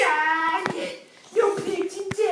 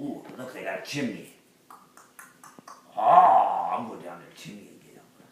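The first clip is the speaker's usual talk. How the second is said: very deep, low storybook puppet wolf voice. Dad performing a puppet show, speaking as the wolf: Big Bad Wolf voice. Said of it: "Big Bad Wolf came to town. / Big Bad Wolf came to town. / Dad puppet show (uploaded 2014)".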